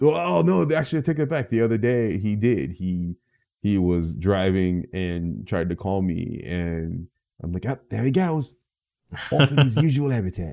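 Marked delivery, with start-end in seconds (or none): 7.7-10.5 good put-on Australian accent, played for laughs. Retelling own reply when a brother called from the road: Australian accent. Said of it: "you do a good Australian accent".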